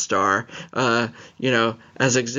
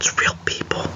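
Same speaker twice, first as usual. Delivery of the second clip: hushed, close, confiding whisper. Mid-conversation, the speaker announces a whisper for this line: whispered. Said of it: "I'm going to whisper this".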